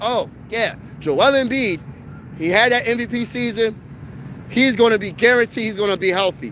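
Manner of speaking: ordinary talk, nothing marked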